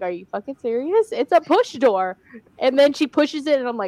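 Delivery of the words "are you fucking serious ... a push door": ordinary talk, nothing marked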